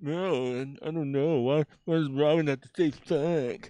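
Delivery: put-on comic book nerd voice, very drawn-out, slow. Imitating comic book nerds complaining about a show: imitating a comic book nerd. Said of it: "It's comic book nerds saying".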